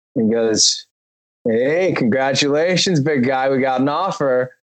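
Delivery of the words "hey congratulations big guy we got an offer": slow, drawled put-on Los Angeles accent. Speaker recalls his manager calling about an offer, quoting him in an LA accent. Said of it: "you guys hear that accent?".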